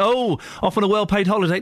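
ordinary delivery

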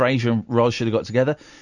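ordinary talk

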